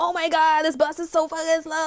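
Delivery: exasperated, frustrated, mild venting, to oneself. Describing being stuck behind a slow bus, yelling at yourself in the car. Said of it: "You can yell at yourself in the car".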